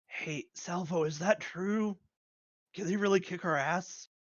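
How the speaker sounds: hushed, half-whispered aside. Voicing a character who steps away from the phone: half-whispering. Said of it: "You hear just whispering".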